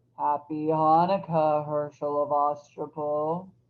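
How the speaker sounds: horrible, snapping, bone-cracking goblin voice. Narrator voicing the goblin king's greeting, in a voice like cracking bones. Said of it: "a voice that sounded like the cracking of bones".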